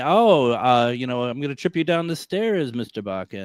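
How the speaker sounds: slow, scheming British movie-villain voice. Voicing the cat Linus the way the other speaker imagined him: British Bond villain voice. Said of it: "He would have sounded like a Bond villain".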